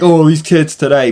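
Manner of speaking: put-on complaining, griping old man voice. Ranting about kids' attitudes, mocking himself: imitating an old man complaining. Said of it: "sound like the old man being like".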